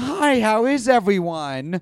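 very slow, high, chipper, overly cheerful, drawn-out delivery. Acting out a kind of speaker: mock-chipper greeting. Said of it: "Or it's like the chipper, like".

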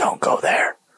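soft, breathy whisper, barely voiced. Retelling hearing a voice while walking down a hallway: imitating a whisper. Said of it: "a whisper".

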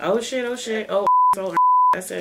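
animated, swooping, sing-song, repetitive delivery. Mocking how the other caller always talks: imitating a friend's "oh shit". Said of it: "That's all you ever say".

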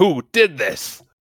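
cross, angry, demanding fatherly voice. Imitating an angry father from the show: imitating the angry father. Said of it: "I said".

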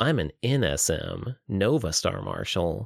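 pleased, proud, boastful, slow and swooping. Narrating a character telling another player his rank: proud. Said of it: "Trevor said proudly".

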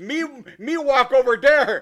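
loud, dumb-sounding broken English. Describing a movie character who talks dumb, quoting him: stupid-sounding Charlie Chan voice. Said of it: "why do you sound so stupid".

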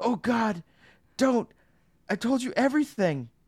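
terrified, scared, very high-pitched voice. Retelling a scene where Rick looks death in the face, imitating scared Rick. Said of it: "Rick is scared".

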